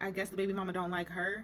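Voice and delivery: ordinary talk, nothing marked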